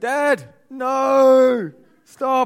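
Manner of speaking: shouted, high and loud.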